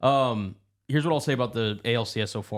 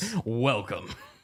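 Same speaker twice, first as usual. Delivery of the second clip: welcoming broadcast announcer voice. Welcoming a friend who gave up on a team, in an announcer voice. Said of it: "that was a great like announcer voice".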